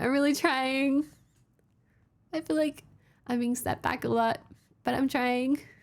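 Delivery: choking up, near tears. Talking about merch setbacks to viewers, choking up, close to tears. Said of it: "I'm gonna cry".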